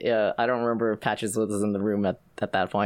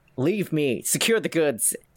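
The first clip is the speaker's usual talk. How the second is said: commanding, authoritative tone with pitch raised; 5 semitones higher than usual. Narrator voicing Zalastra as McKinnon wakes him, Zalastra shouting orders loudly. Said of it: "Zalastra goes loudly".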